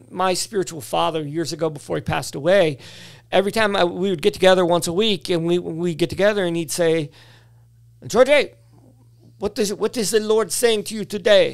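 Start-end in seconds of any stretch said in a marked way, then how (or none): 8.0-11.5 poor, bad put-on Cuban accent. Quoting his late spiritual father's weekly question, in a bad Cuban accent. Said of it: "that was my worst Cuban impersonation".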